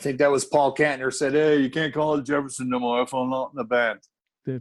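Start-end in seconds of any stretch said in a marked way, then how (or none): 1.3-4.0 put-on, fake British accent. Retelling what a band member said about the band's name, in a put-on British accent. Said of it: "I don't know why I'm doing a British accent".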